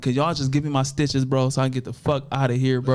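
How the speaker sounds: ordinary talk, nothing marked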